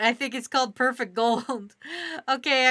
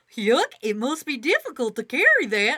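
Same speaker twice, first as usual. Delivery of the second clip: goofy voice with pitch swinging wildly up and down. Reading a story aloud, the narrator voices Gorth's line in a goofy voice. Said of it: "I can't do the goofy voice".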